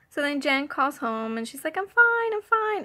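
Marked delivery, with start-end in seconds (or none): 1.8-2.9 sweet, high, slightly loud voice. Retelling how Jan talks when she calls home: Jan's sweetest voice. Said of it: "she has the sweetest voice".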